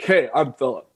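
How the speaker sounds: forced, low, deep baritone voice. Recalling how one sounded in middle school, imitating own past deep baritone. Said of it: "I was very, like, deep baritone".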